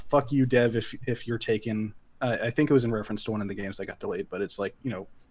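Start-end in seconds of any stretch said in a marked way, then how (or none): none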